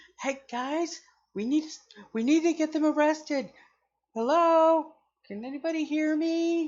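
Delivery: tiny, very high, strained gnome voice yelling. Speaker voices a gnome character calling out over loud music, soft-spoken gnome trying to yell. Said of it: "your soft spoken gnomish voice to yell".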